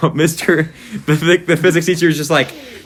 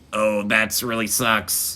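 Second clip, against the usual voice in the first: robotic voice, lower and quieter; 7 semitones lower, 7 dB quieter than usual. Recalling a show to friends, the speaker does the South Park guy's robot voice. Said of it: "He's just like a robot".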